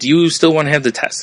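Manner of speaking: ordinary talk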